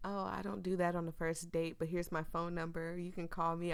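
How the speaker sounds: ordinary delivery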